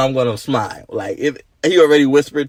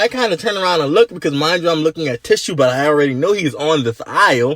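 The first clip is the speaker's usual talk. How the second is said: usual speaking voice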